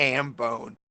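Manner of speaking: usual speaking voice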